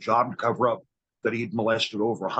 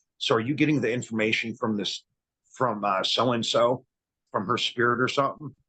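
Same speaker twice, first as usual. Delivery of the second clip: ordinary talk, nothing marked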